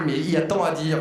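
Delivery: ordinary delivery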